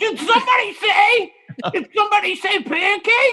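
put-on cartoon bird character voice. Playing the titty bird, arriving and asking about pancakes: titty bird voice. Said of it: "you have a whole new voice all of a sudden".

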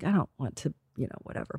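quiet, hushed, trailing off.

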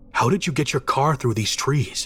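ordinary delivery

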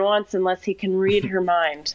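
normal talking voice

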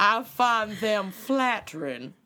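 southern drawl with vowels stretched out. Podcast hosts trying accents their southern listeners will judge, southern drawl. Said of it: "my Southern drawl".

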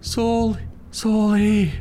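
put-on, very high, really scared crying out. Retelling hearing someone call from downstairs, imitating Joanne's scared voice. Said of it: "really scared voice go".

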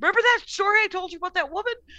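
high, rattled-off, fast excitement. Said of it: "she's like".

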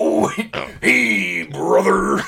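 booming, slow, drawn-out huge bellow. Greeting someone after being asked for the Macho Man Randy Savage voice. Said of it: "in the Macho Man Randy Savage voice".

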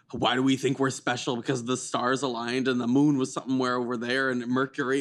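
ordinary talk, nothing marked

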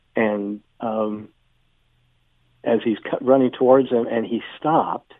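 normal talking voice

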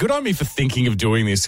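plain

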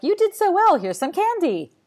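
high, loud, exaggerated gushing praise.

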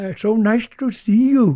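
put-on Chinese-English accent, words drawn out. Retelling a greeting, imitating Bulger's Sino-Anglo accent. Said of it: "Sino-Anglo accent".

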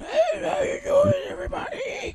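put-on very high, aged-sounding old-person voice. Asking why voices change with age: imitating an old person's voice. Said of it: "How come it goes from normal voice".

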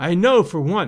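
ordinary delivery

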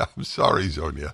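speaking through laughter. Apologizing to a caller after a phone line mix-up, laughing while talking. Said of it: "I'm laughing because".

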